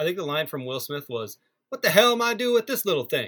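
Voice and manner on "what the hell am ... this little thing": high-pitched put-on American accent, impression style. Quoting a movie line to the others: Will Smith impression.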